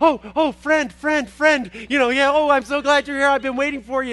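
gushing, overjoyed, excited, happy puppy voice. Voicing the happy bouncy dog met while running: excited happy dog voice. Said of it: "so excited".

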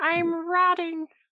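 miserable, unhappy, high-pitched apple voice. Asked by another speaker to sound like an unhappy apple: unhappy apple voice. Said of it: "Can you sound like an unhappy apple for me?".

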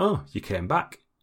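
mildly startled, faintly puzzled. Retelling what everybody said when they came back, mock half-surprised tone. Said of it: "In that kind of like half-surprised tone".

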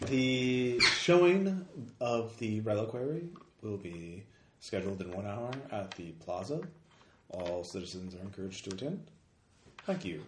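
low, emotionless announcement voice. Reading out a scene where an announcement interrupts the music, in an emotionless voice. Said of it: "a sort of emotionless voice".

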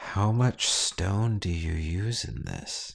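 whispering in a low voice. He leans in, squints at you and asks: low whisper. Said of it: "whispers in a low voice".

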